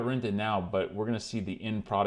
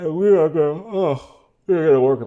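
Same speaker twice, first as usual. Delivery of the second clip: loud, high words stretched by a very loud yawn; 7 semitones higher, 11 dB louder than usual. Working with used gloves on camera, yawning while talking. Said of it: "I keep yawning".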